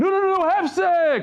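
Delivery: put-on screaming. Storyteller recounting a man's outburst during a blessing, retelling a scream. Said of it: "So he started screaming".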